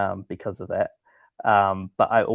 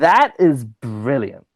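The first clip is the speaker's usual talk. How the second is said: loud, excited, thrilled, swooping exclamation; 4 semitones higher, 8 dB louder than usual. Guest asked by the host to say a phrase, emotionally charged and excited. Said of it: "in your most uh, emotionally charged and excited voice".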